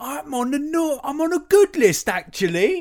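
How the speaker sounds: put-on very high, loud, drawn-out little-kid voice. Retelling what a kid says in a viral video: imitating a kid from a viral video. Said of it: "He's like".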